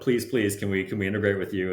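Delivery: ordinary delivery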